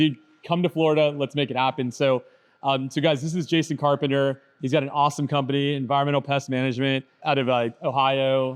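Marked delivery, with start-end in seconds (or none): none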